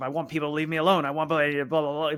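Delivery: mock-angry, impassioned ranting delivery. Recounting a character's speech from a scene, mock-angry impassioned speech. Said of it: "very angry".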